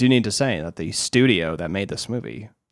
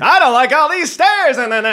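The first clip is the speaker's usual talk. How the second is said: very high, loud, cute, heightened comic outrage; 7 dB louder than usual. Asked for a line, the speaker does an impression of heightened comedy-story voice. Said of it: "an impression".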